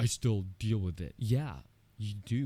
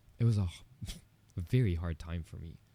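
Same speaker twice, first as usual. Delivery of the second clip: choked up, emotion catching in the throat. Speaker looks back on a very hard time, getting choked up. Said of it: "It's making me choked up".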